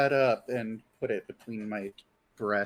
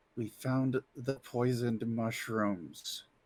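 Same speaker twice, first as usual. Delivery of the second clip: close-up hushed half-whisper, no voice; 5 dB quieter than usual. Playing a character who grabs someone by the shoulder: half-whispering in his ear. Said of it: "I'm going to whisper in his ear".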